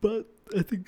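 words stretched through a very high-pitched yawn. Speaker talking about old friendships, yawning while talking. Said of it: "I'm yawning while talking".

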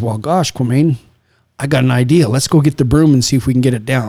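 ordinary delivery

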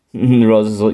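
plain

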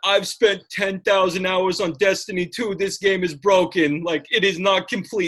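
put-on dumb idiot voice. Mocking gamers who complain about a game, in a dumb idiot voice. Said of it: "I just love [name]'s dumb idiot voice".

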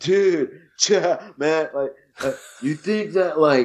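put-on California surfer dude voice. Describing how a character on a show talks, imitating him: surfer dude voice. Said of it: "he talks like a surfer".

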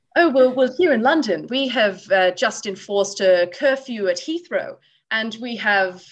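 very bad, terrible put-on British accent. Retelling what a woman said to him: terrible british accent. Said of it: "this is going to be a very terrible British accent, but I'm going to give it a go anyway".

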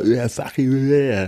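high-pitched, posh, upper-crust voice. Retelling a heckler's reply to Will Smith, posh heckler impression. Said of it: "the guy was like".

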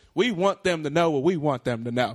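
put-on thick Southern accent, laid on. Quoting a line from a movie trailer: Channing Tatum heavy Southern accent. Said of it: "everyone's talking in a heavy Southern accent".

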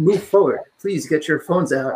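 robotic, computerized recorded-announcement tone. Speaker recalling announcements over the speakers at an event center, computerized announcement voice. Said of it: "in this like computerized voice".

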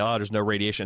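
normal talking voice

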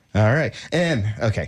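ordinary talk

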